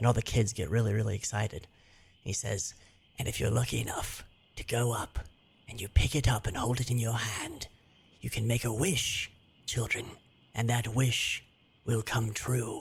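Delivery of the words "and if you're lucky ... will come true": put-on elderly man voice, quieter. Telling a story, voicing a character speaking to children: old man voice. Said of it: "'cause it wants to be old".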